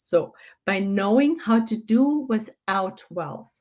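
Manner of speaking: repeated very slowly and deliberately.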